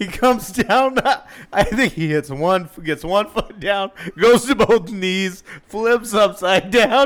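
talking through laughter. Describing a friend's fall while still laughing: laughing while talking. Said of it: "I'm still laughing".

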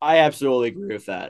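cracking voice. Agreeing that the Jets' downfall is upon us: voice cracking. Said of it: "Voice crack".

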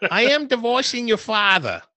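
put-on very loud, very high, shrill New York accent. Playing the mom in an improvised scene with her child: New York mom accent. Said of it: "I wonder if I can have like a New York mom accent".

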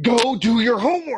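loud, aggressive shouting pitched very high. Explaining how Americans push a point, the speaker demonstrates an aggressive raised voice. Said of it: "We'll get really aggressive like that".

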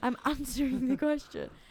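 exasperated, high, wide laughing voice.

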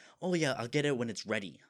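mock, bitchy, snippy, dismissive tone. Retelling a rude waitress answering the speaker's mom, mimicking a bitchy reply. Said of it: "in a bitchy way".

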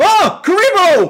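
high, loud, shocked surprise, caught off guard. Retelling a scene where Pegasus reacts: imitating Pegasus sounding shocked. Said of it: "how surprised and shocked Pegasus sounds".

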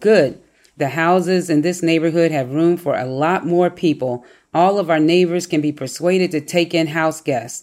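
normal talking voice

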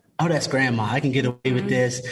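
ordinary talk

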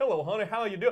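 put-on drawling American Southern accent. Imitating a movie actor's dubbed line: imitating a dubbed Southern accent. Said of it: "dubbed over him with a Southern accent".

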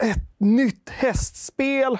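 put-on high, slow, excited, thrilled child voice.

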